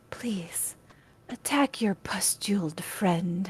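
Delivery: eerie, creepy, soft whispering voice. A game master voices a character commanding a player in their mind, creepy whispering voice. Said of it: "You hear in your mind this like really creepy whispering voice".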